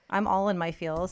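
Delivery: plain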